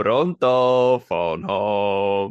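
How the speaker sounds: fake Italian accent, home drawn out. Riffing on E.T. recast as an Italian story; mock Italian accent.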